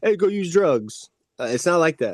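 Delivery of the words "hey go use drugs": blaring, very loud, very high shout. Describing how the disease does not talk: imitating a loud voice. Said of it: "real loud".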